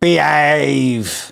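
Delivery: rough, drawn-out, creaky put-on character voice. Recalling an early-nineties tv program, in an imitated character voice. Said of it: "I'm going to do the voice".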